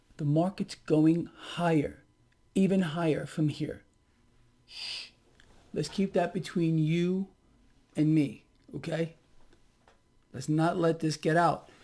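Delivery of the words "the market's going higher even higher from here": speaking quietly in a hushed, soft voice. Drawing the listener in close to share a secret, speaking quietly. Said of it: "I'm going to say this quietly".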